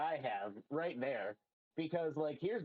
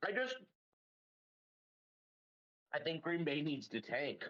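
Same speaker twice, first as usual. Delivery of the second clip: talking with a mouth full of candy. Giving an opinion on a football team, talking with candy in mouth. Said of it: "I got candy in my mouth".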